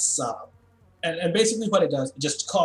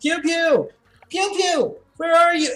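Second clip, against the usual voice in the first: very high, loud, calling yell; 14 semitones higher, 6 dB louder than usual. Narrating a scene, voicing Callie as she comes downstairs: Callie yelling a name. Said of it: "she's yelling".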